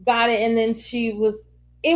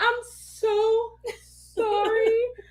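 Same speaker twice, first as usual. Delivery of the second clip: mock weepy, tearful, high crying voice; 11 semitones higher than usual. Retelling apologizing to a child afterward, imitating own past crying. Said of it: "I'm crying".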